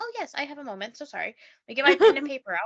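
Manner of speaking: over-eager, swooping, loud and fast gush. Retelling a woman taking a call while busy, imitating an excited eager voice. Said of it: "She's like clearly so excited about it".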